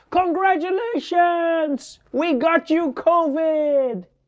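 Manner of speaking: high, slow mock yell of schoolkids.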